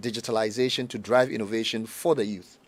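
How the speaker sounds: ordinary delivery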